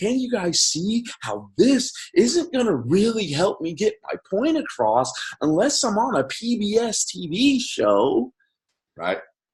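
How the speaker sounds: acted very high, sing-song, condescending voice. Imitating a guy at an event talking down: mock condescending, like to kids. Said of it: "talking like this, like I'm talking to a bunch of little kids".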